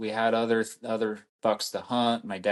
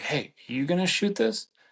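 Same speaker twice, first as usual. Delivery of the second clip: very high, pretend-secret stage whisper; 9 semitones higher than usual. Retelling half-whispering to your dad while a buck stands nearby, retelling a half-whisper. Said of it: "trying to whisper to each other".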